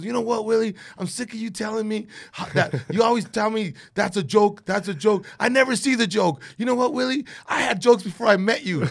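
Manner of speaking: very high-pitched, shrill yelling rant. Retelling how a friend yelled at the speaker: imitating a friend yelling. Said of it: "he starts yelling at me".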